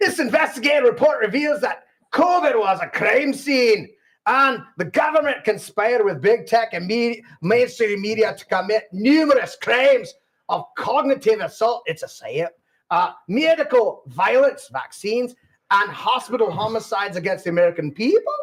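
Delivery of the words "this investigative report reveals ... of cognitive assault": put-on Scottish accent. Reading a report aloud in a put-on Scottish accent.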